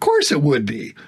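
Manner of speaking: put-on amused voice, speaking through chuckling laughter. Retelling how he answered about a banner sign, the speaker does a chuckling reply. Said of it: "I'm kind of chuckling and laughing".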